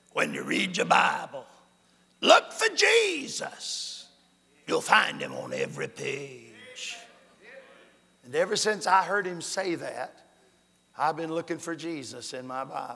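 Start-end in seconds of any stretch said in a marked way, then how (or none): 0.2-7.0 rough, gravelly, gravel-toned preacher's voice. Recalling a sermon, the speaker quotes the preacher, imitating Harold Seitler's gravelly voice. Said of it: "in his gravelly voice".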